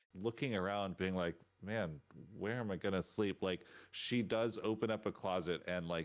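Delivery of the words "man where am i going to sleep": normal talking voice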